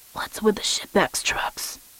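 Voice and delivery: hushed, rasped, breathy whisper under the breath. Audiobook narrator voicing the Troll's question from the van, raspy Troll voice. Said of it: "he rasped".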